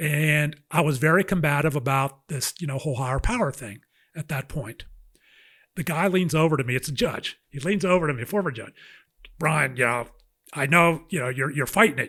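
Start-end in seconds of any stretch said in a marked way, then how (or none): 9.4-12.1 rough, gravel-toned voice. Retelling what a former judge leaned over and told him at a meeting, gravelly voice. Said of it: "in his gravelly voice".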